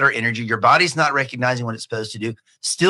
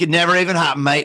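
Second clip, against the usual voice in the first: imitated Australian accent; 3 semitones higher than usual. Retelling what a motocross rider said after his adjustments, in an australian accent. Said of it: "Sorry for the Australian accent".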